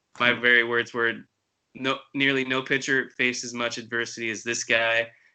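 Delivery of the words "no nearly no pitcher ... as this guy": usual speaking voice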